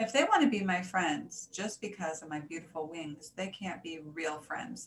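ordinary delivery

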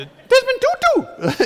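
high chipmunk-like voice. Imitating Desmond Tutu's voice for an audience: Desmond Tutu voice. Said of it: "a voice like Chipmunk on acid".

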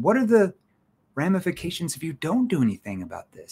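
challenging, skeptical, probing tone with swooping pitch. Teaching tones for different questions, demonstrating a challenging skeptical tone. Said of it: "that's a challenging tone".

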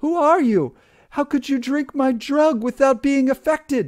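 very high, loud, terrified shriek. Circe, flinging herself on her knees as Odysseus charges her, shrieking in terror. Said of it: "Circe shrieked and flung herself onto her knees".

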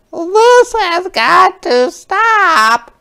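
shrill, very high, very slow, drawn-out screech. Mrs. Pinch reacts to the children playing ball outside, shrieking. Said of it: "shrieked Mrs. Pinch".

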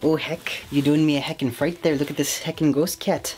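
put-on Canadian-accented voice. Speaker thanking a viewer for a message, Canadian accent. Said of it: "I will not stop with the Canadian accent".

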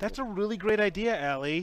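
pointed, passive-aggressive praise tone. Showing how to praise an idea in a put-on way: passive aggressive. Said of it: "you gotta be more passive aggressive".

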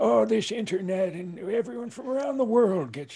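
put-on old man voice, pitched very high. Joking about going to sleep early, speaker slips into an old man voice. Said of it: "I sound like an old man".

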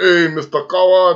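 put-on Caribbean accent. Retelling a man who sounded Caribbean to him, imitating a Caribbean accent. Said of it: "why he sound like he's from the Caribbean".

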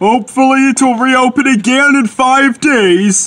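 pompous, self-important. Back at the sheds, an engine answers a weary fellow engine, pompous. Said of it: "said Gordon pompously".

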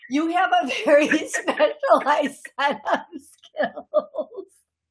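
high voice, words broken up by laughter. Trying to get back on track while laughing while talking. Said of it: "I laughed so hard I snorted".

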